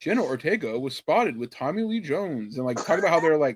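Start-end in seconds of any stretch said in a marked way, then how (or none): 0.0-2.6 fake, canned, computer-generated AI narrator voice. Describing a TikTok video with a fake AI voice: imitating a fake AI voice. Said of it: "a fake A I voice going".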